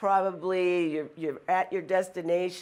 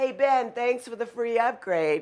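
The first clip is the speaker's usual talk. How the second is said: mock, mild, high-pitched calling out; 5 semitones higher than usual. Retelling leaving with people behind, calling out to ben: retelling a loud yell. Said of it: "I yell out in my loud voice".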